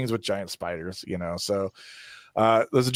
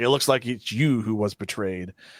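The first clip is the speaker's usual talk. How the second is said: ordinary delivery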